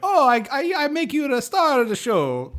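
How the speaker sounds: put-on little old Italian man, very high, slow, swooping. Imagining a tuxedo rental shop worker talking: little old italian man voice. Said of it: "it's like a little old Italian man".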